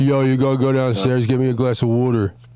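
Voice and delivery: slurred, mumbled Philly accent, words running together. Showing how their home accent sounds to others, slurred Philly accent. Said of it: "Everything runs together".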